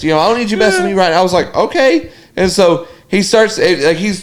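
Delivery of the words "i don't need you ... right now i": ordinary talk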